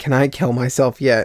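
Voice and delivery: ordinary talk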